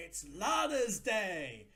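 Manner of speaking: screaming slowly and loudly.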